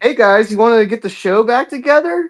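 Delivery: put-on sweet friendly tone. Retelling how Doctor Fox started: imitating him speaking nicely. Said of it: "he started all nice".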